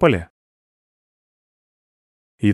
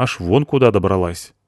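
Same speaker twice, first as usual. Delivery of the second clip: ordinary delivery, nothing marked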